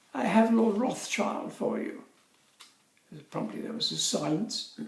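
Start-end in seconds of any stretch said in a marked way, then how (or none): 0.2-2.1 posh, plummy, high English woman's voice. Retelling a phone call to the office, as a plummy english woman's voice. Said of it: "a plummy English woman's voice saying".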